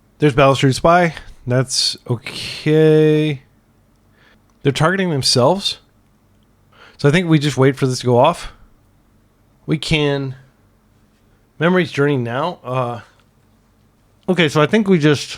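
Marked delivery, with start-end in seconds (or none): 12.6-15.4 speaking mid-chew through a mouthful. Explaining a card game play aloud, apologizing mid-thought: talking while eating. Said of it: "Sorry, I'm like eating".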